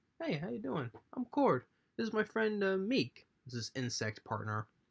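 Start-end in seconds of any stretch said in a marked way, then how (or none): 0.2-3.3 small, soft, high little voice. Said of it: "small, soft voice. ... Talks like that".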